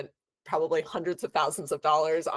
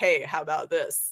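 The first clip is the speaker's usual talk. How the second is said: put-on dry deadpan voice, slower. Quoting how he suggests things when they miss stuff, imitating his dry deadpan voice. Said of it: "in the most dry voice".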